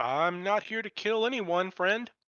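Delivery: loud, high yell. Game master voicing a stranger answering the party's shout: yelling back. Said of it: "And he yells back".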